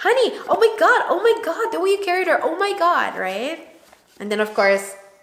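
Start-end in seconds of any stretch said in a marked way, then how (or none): 0.0-3.2 put-on panic, much higher, slower. The speaker acts out how they address their partner holding the baby: panicked tone. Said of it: "I get so panicked and anxious that I tend to have a tone".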